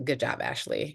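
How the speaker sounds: dry, sarcastic tone. Speaker showing how they talk to themselves after dropping something: sarcastic. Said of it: "It's in the sarc sarcastic tone".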